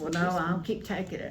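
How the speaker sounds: ordinary talk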